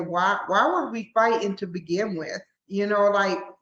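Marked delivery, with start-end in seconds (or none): none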